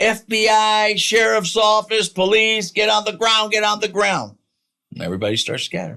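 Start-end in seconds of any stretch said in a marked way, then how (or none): 0.0-4.4 very high, loud yelling. Retelling a raid and how he yelled at the men running out: retelling a yell. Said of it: "and I start yelling".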